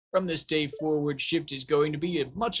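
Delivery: put-on British accent. Voicing Lewis officiating a wedding, with a British accent. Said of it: "why am I giving Lewis a British accent?".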